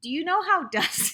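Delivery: holding back a laugh. Telling the listener about a man named Dusty, holding back a laugh. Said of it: "I'm trying not to laugh".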